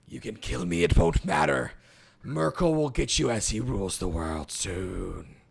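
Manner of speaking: very low, raspy, swooping hiss. A game master voices a character hissing back at a player, in a raspy hissing voice. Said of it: "this like raspy voice um, start to kind of like hiss back".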